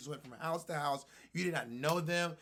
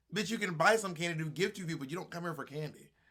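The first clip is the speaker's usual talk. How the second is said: ordinary talk, nothing marked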